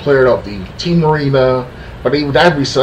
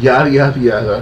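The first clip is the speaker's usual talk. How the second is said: fast, snarky, condescending tone. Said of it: "was being snarky and, you know, being, like, condescending".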